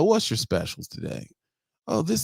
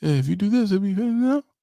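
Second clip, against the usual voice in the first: put-on timid, shy mumbling; 2 semitones higher, 3 dB louder than usual. Retelling what the timid person at the register said, imitating a timid mumble. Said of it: "I can't hear you".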